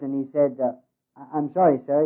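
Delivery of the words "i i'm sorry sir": ordinary talk, nothing marked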